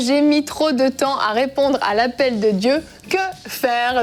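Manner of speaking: plain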